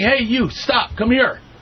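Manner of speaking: acted-out man's yell. Recounting a man following them off the boardwalk, retelling a yell. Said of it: "he yells at me".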